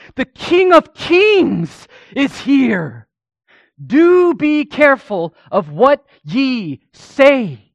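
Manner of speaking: soaring, swooping cry, very loud and very high. Telling how a man spoke one final time, retelling a shout. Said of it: "he began to shout".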